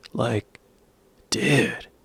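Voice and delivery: laid-back California speech. Showing how people in California talk, a slow California drawl. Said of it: "It's sort of like this".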